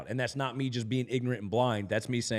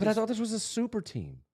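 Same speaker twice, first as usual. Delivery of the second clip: sarcastic, very high-pitched mock shock and disbelief; 10 semitones higher than usual. Teasing the other speaker about the team, sarcastic. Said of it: "I know you're being sarcastic".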